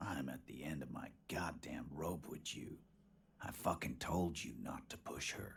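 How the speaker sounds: spoken through clenched teeth. Voicing a lawman who is losing patience: through clenched teeth. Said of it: "He says through clenched teeth".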